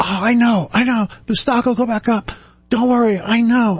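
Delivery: play-acted, very high-pitched, shrieked scream with soothing tone. Retelling a man screaming into the phone at a client, retelling a scream. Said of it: "Screaming at the top of his lungs".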